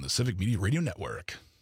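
big announcer voice with a different timbre. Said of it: "a better radio voice".

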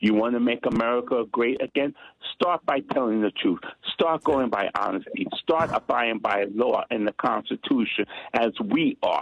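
ordinary talk, nothing marked

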